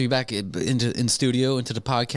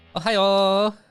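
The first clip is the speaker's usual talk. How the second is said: put-on Hawaiian accent, higher and louder; 8 semitones higher, 4 dB louder than usual. Showing a Kauai style greeting: Kauai style greeting. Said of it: "a Kauai style".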